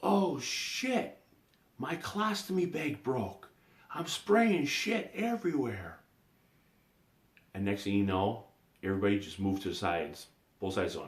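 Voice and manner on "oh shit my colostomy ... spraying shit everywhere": very high, drawn-out yell, acted out. Retelling how a cousin yelled to clear a crowded concourse: imitating Terry yelling. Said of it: "he starts yelling".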